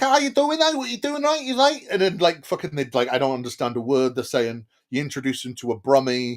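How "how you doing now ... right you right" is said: put-on very high-pitched Liverpool Scouse accent. Imitating people from Liverpool talking to him, in a Liverpool accent. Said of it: "anybody from Liverpool".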